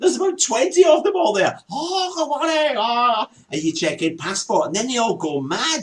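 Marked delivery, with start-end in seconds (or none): 1.7-3.3 gushing, high, drawn-out, excited delivery. Describing checking into a hotel in Thailand, imitating the hotel staff. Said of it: "all these impersonations you're doing".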